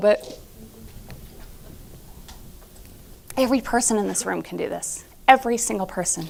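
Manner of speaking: getting emotional. Addressing everyone in the room, getting emotional. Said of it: "excuse me as I'm getting emotional".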